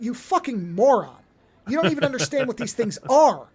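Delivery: scornful, contemptuous tone. Retelling how Kirsch scolds the reckless Cavalier near the eggs: imitating Kirsch's contempt. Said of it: "But the way he says it is like".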